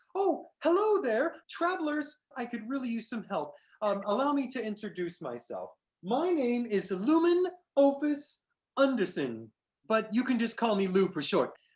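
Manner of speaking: upbeat, optimistic, hopeful and eager delivery. Narrator voices a satyr running over to the travelers, hopeful and optimistic. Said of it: "hopeful, optimistic look. He runs over to you all and he's like".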